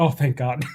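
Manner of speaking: muttered quietly under breath. Voicing a character reacting with relief: under his breath. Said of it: "under his breath".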